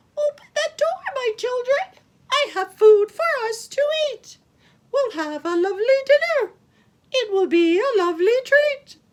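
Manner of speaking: shrill, very high, loud, squeaky sing-song voice. Reading a story, the wolf calls to the kids: high, squeaky voice. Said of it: "he sang in a high, squeaky voice".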